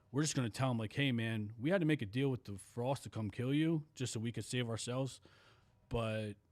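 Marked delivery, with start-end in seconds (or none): none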